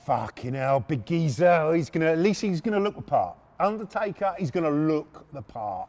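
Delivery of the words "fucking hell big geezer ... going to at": plain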